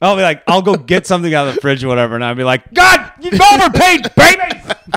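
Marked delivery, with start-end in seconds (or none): 2.7-5.0 very high, very slow, drawn-out scream. Act out what you say at him while getting something from the fridge, retelling your own screaming. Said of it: "That's me just screaming at him".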